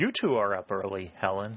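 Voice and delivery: plain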